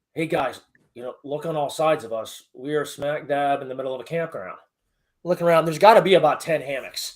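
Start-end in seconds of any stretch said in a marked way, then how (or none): 0.2-4.6 soft, hushed half-whisper under the breath. Retelling a night mission, repeating the team leader's words: imitating Joe half-whispering. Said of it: "we hear Joe whisper".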